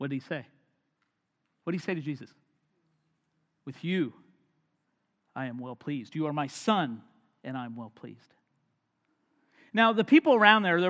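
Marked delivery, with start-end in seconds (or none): 3.6-8.2 deepest possible voice. Quoting God's words to Jesus at the baptism: deep voice of God. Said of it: "The deep voice, God".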